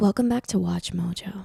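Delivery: overly sexual, sultry, seductive delivery. Trying out a show's opening line while another person coaches, too-sexual delivery. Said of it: "that's too sexual".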